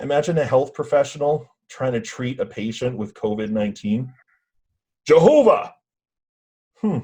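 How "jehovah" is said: very high, loud, yelled shout. Acting a health worker treating a covid patient, shouting Jehovah. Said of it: "Maybe I wasn't saying it loud enough".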